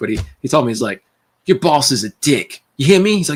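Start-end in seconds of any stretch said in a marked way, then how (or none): 1.5-3.2 put-on heavily laid-on, thick British accent. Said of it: "Real thick British accent".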